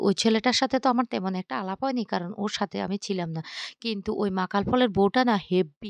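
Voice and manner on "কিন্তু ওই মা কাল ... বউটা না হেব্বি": ordinary delivery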